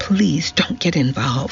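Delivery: ordinary delivery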